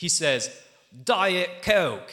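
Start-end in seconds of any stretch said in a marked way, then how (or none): 1.0-2.1 put-on British accent. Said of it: "because he's British".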